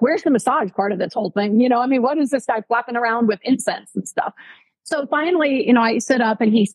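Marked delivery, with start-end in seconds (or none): none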